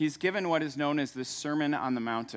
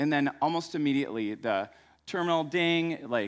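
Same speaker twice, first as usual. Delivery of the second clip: ordinary talk, nothing marked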